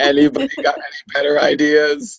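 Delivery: ordinary talk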